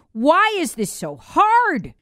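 exasperated, fed-up, frustrated, high and drawn out. Explaining Pentagon and CIA censorship, openly voicing frustration in the moment. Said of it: "you can hear the frustration in my voice".

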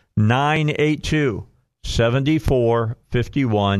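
deliberately slowed delivery. Repeating a phone number for listeners after complaints of talking fast, saying it slower. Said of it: "Let me say that a little slower".

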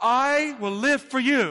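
loud, very slow. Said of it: "It was louder".

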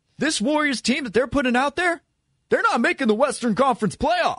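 clumsy, deliberately bad, very high-pitched put-on voice. Quoting a late-game prediction in a bad Jeff Van Gundy impression. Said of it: "if I'm doing a Jeff Van Gundy impression".

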